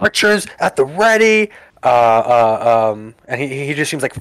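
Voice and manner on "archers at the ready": frantic yelling scream, much higher. A narrator voices a ship captain running around the boat, screaming orders. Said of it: "He's screaming like".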